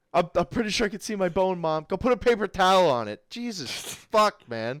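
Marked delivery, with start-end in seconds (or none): 0.2-1.9 acted-out tearful crying with a pleading tone. Retelling walking in to mom after an injury, imitating own past crying. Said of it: "I'm crying".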